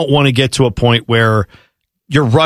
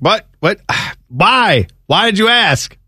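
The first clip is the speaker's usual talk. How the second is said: mock exasperated tone, pitched higher; 7 semitones higher than usual. Imitating a coworker, hands thrown up, asking why he was asked. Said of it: "his hands just go up in the air. He's like".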